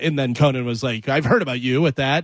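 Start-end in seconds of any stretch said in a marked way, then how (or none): none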